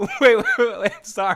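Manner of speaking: very high, very loud laughter-filled words. Reacting to a caller claiming to be Lalo Salamanca, laughing while talking. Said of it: "I'm laughing too much".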